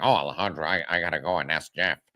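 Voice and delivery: low, nasal, anxious male voice. Describing a friend who just talks like this, imitating Andrew's voice. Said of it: "he just talks like this".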